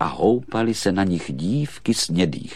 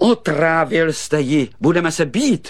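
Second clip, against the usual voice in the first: high, loud crying out; 9 semitones higher, 6 dB louder than usual. A shepherd boy confronts the prince over the doll, crying out again. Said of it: "znovu vykřikl pasáček".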